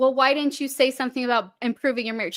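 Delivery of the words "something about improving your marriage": normal talking voice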